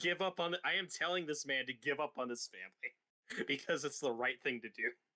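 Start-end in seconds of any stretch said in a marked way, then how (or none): none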